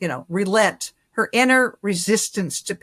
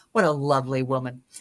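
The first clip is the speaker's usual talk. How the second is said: put-on sarcastic tone, lower pitch; 6 semitones lower, 3 dB quieter than usual. Retelling Mom's remark about a painted figure: imitating a sarcastic remark. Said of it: "sort of said carsa-, sar-, sarcastically".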